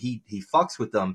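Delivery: ordinary delivery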